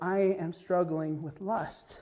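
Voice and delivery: slow, shaky, trembling quavering voice. Retelling a man's confession during prayer requests at a camp, imitating a shaking voice. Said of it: "And with a shaking voice".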